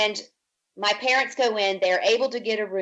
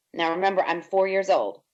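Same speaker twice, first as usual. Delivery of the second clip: ordinary delivery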